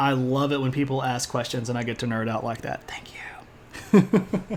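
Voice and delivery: soft, unvoiced whisper, set apart from the rest.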